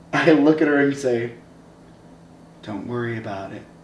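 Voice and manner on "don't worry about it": creepy, menacing, murderous-sounding voice. Retelling own words to a girl at a dance: imitating a Zodiac killer line. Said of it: "like a goddamn Zodiac killer".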